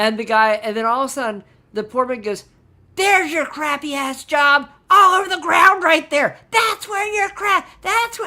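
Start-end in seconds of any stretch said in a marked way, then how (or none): 2.9-8.3 very high, rising, screaming yell. Retelling how the foreman yelled at a worker: imitating a foreman yelling. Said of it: "he's yelling and screaming at him".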